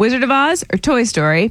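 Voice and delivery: ordinary talk, nothing marked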